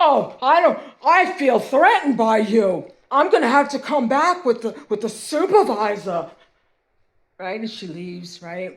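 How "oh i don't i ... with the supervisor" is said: very loud put-on entitled complainer voice. Retelling a woman's complaint about feeling threatened: imitating a Karen. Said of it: "she did a Karen on me".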